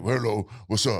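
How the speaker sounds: low, dropped-down put-on bass voice. Choosing a voice for a character, trying a put-on deep voice.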